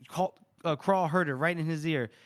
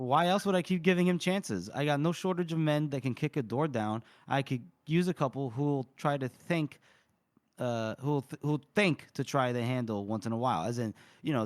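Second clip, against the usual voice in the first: normal talking voice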